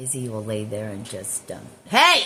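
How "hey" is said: high, loud sudden yell. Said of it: "Sorry for yelling at you guys".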